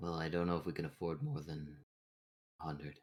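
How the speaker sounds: whispering. Player speaks so nobody else notices, whispering. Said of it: "and I'm whispering that".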